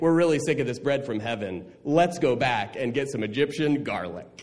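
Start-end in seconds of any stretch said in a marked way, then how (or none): none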